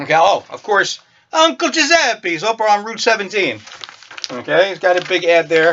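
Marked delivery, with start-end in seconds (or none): 1.3-3.6 jokey put-on Italian accent. Reading a newspaper ad aloud as a joke: put-on Italian accent. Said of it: "that was me being Italian".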